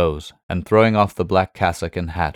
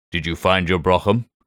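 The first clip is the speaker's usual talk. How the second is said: ordinary delivery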